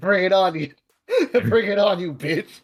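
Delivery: panting, out of breath, taunting tone. Voicing the character Delta taunting a winded foe: panting while taunting. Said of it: "Delta is also panting".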